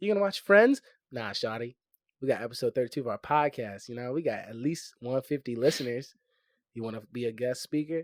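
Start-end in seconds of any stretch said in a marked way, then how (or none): 1.1-8.0 suave, smooth, slick, sweet-talking delivery. Acting out inviting a girl to be a podcast guest: smooth pickup line. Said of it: "That's actually kinda smooth".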